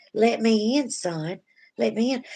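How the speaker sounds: slow creature speaking in a motherly mama voice. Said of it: "a creature with his mama's voice".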